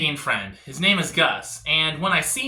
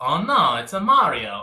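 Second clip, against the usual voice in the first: dull, slow, flat character voice with no pizzazz. Mocking someone's weak impression by showing how he does it: dull Super Mario impression. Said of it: "He does it like this".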